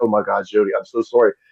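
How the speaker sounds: put-on mortified tone. A speaker retells a woman apologizing after his crowd introduction: imitating a mortified apology. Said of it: "she's like mortified".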